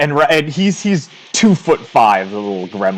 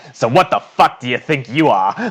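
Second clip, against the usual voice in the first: sudden switch to a salty sailor voice. A figure switches abruptly from a child's voice: salty sailor's voice. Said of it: "in a salty sailor's voice goes".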